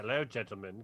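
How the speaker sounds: imitated British accent. Retelling a movie character's greeting over the radio: imitating a British accent. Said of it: "she still has a British accent at that point".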